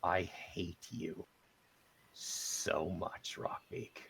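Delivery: tearful, quiet and slow. Playing Kel, a tear in his eye, speaking to Rockbeak, catch in voice, near tears. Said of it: "you hear that catch in his voice".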